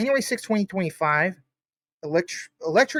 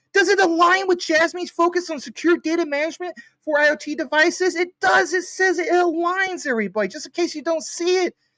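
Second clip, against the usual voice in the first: loud, insistent yelling with emphasis; 9 semitones higher than usual. Reading a chatbot's answer aloud to viewers, the speaker is yelling. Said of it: "it sounds like I'm yelling".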